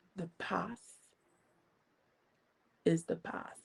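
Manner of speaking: very hushed, deep, calm, menacing tone. Retelling what a very tall man said, imitating his calm menacing voice. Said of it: "in a menacing voice, very calm ... profound voice".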